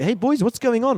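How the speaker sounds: put-on South African accent, very high. Retelling his past self addressing boys at a new high school, South African accent. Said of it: "spoke like a South African".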